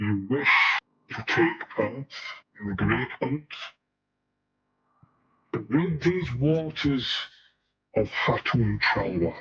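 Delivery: otherworldly, haunting, eerie put-on spooky voice. Asked to put the spooky voice back on, a character answers in a spooky voice. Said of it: "Put the spooky voice back on".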